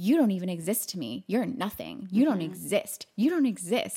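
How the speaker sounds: mock yelling, acted-out shout. Recapping a scene with a friend, retelling a character's yelling. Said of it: "Nancy starts yelling".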